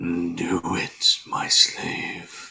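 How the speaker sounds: tiny whispered inner voice, very drawn out and slow. Voicing a voice in a character's head as he speaks: small voice in the head. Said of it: "a small voice say".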